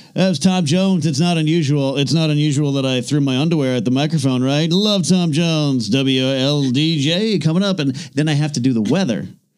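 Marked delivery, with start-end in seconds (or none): 0.2-7.8 put-on on-air radio disc jockey patter. Retelling the lines read on the radio show: put-on radio announcer voice. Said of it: "I could turn it on".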